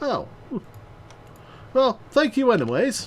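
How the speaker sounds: high, silly put-on talking-ferret character voice. Doing voices in a scene, the speaker plays a talking ferret in a ferret character voice. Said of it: "I like doing voices".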